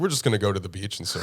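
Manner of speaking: sarcastic delivery. Retelling their answer to a lady announcing they won, retelling a sarcastic reply. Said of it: "Super sarcastic".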